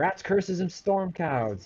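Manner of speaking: loud curses, high and swooping. Voicing an unseen figure heard behind the house: cursing aloud. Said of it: "you hear curses as it goes".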